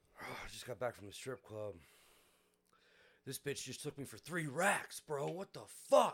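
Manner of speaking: mock distraught, worked-up voice, loud and rising. Retelling what a man said in the elevator, imitating a distraught man. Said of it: "he's fucking distraught".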